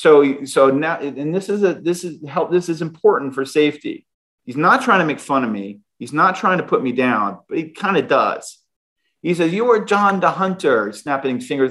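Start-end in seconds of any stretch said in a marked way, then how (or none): 9.5-10.9 put-on German accent, higher pitch. Retelling what a Swiss German boss said: put-on German accent. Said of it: "I always play around with this German accent".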